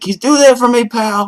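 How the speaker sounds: very high, very loud, shrill whining. Describing a movie phone call with his cop friend, the speaker does a whiny Bruce Willis impression. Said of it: "He gets like really whiny".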